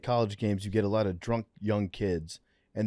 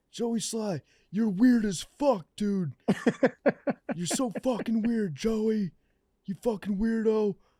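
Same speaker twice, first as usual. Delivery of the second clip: put-on drunken screaming, pitched higher; 12 semitones higher than usual. Retelling what a heckling fan kept shouting at the kicker: imitating a drunk fan screaming. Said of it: "He kept screaming".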